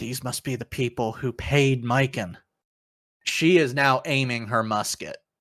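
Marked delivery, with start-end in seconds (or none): 0.0-2.4 muttered quietly under the breath. Narrating a woman who is aiming her musket, muttered under her breath. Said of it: "under her breath".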